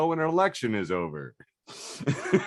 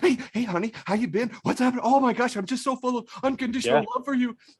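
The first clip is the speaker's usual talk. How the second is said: very high, eager, doting, gushing doggy-talk voice; 11 semitones higher than usual. Acting out a partner who runs up at the door like a dog: imitating an eager dog-like partner. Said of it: "they want a woman that's like that dog".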